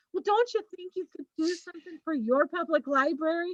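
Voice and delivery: kind, sugary librarian voice. Showing how to ask the block owner for help: kindest librarian voice. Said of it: "your librarian kindest voice".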